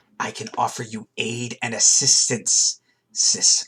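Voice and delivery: raspy, rasping character voice. A game master voices someone heard through a door offering help, rasping voice. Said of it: "someone with a rasping voice say".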